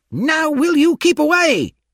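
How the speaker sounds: very high-pitched, shrill, furious scream. Narrator reads a man's line shouted mid-fistfight: screaming angrily. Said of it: "I heard Paul scream angrily".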